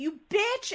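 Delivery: mock sudden outburst, shrill, very high yell. Retelling to others how Joe yelled in a wild, funny scene, imitating someone yelling. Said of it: "Joe like yells like".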